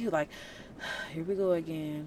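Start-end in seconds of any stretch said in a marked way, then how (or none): 1.1-2.1 low, soft, weary sarcasm with a sigh. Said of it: "Jesus had a whole sarcastic voice".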